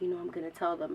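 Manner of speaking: quiet whisper. Retelling what he whispered in the car: imitating Emmanuel whispering. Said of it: "he whispers to me".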